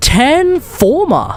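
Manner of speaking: very slow, high, incredulous drawl.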